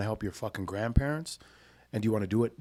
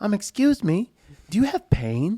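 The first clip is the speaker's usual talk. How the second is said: very high, slow, awkward nerdy voice; 10 semitones higher, 9 dB louder than usual. Retelling a stranger's question to people, imitating his nerdy geek voice. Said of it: "He just kind of sounds like a geek".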